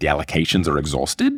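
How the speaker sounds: Australian question-like upturn at end of "exhausted". Explaining the key to an Australian accent: Australian-style rising ending. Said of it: "you got to do the up at the ends".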